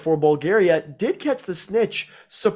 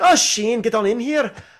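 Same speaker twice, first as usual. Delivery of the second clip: put-on strong, very Irish accent with pitch raised, called out; 5 semitones higher than usual. Recalling a school friend's mother, imitating her Irish-sounding voice. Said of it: "the most Irish sounding voice".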